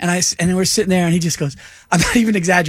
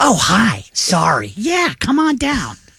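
odd, weird, swooping sing-song voice; 3 semitones higher than usual. Retelling a man who answered him at a shop, speaker imitates the man's weird voice. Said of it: "He had a weird voice".

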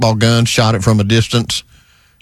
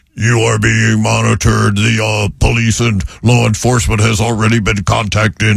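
very deep, authoritative robot voice. Warn someone at a statue after a blinding light flashes, in a deep, authoritative Optimus Prime voice. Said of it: "a very deep, authoritative transformer kind of a voice".

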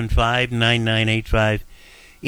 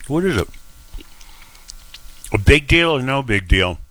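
chewing while talking, mouth full of food. A host asks listeners to call in while eating toast: talking while eating toast. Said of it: "Excuse me, I'm eating a piece of toast".

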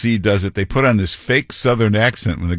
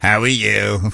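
put-on New York accent. Mocking someone switching back home: imitating a new york accent. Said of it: "Right back to the New York accent".

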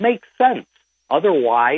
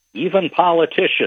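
words with a small laugh, pitched up; 5 semitones higher than usual. Guest discussing solutions to concerns about data centers, little laugh in voice. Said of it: "with a little laugh in my voice".

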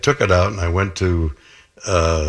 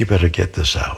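mock-loving, tender, concerned tone. Retelling what a doctor said with his hands on his cheeks, retelling a loving line. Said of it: "with love in his voice".

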